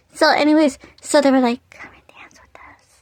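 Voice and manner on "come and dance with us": very hushed, breathy, barely voiced whisper. Retelling how people at a party invited them over: imitating someone whispering. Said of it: "Like, whispering".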